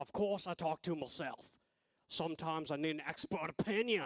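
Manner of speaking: put-on Australian accent. Prompted to embody a former Australian professor's accent; Australian accent. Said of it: "This is your moment to embody that accent".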